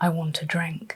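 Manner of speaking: put-on deep gravelly voice. Recounting a voice heard while unpacking by the bed, imitating a deep gravelly voice. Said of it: "Very deep, gravelly voice".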